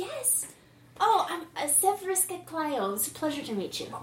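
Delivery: prim, brisk British nanny voice bubbling over with delight. Player voicing a Chiss character introducing herself, excited stern British nanny voice. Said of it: "means a slightly higher pitch of her voice and a faster pace of talking and a lot more animation in her gestures. Yes. But think of it as the, a stern British nanny who's really, really excited about things. ... But think of it as the, a stern British nanny who's really, ... means a slightly higher".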